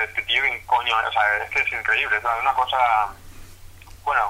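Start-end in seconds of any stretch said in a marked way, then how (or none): none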